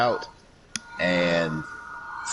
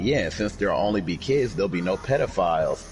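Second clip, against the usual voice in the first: ordinary delivery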